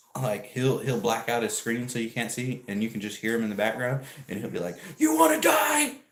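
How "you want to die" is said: put-on very high, loud, belligerent drunken shout. Describing a drunk streamer shouting at passersby, imitating a drunk man yelling. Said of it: "he was just like yelling at random people".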